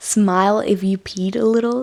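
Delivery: plain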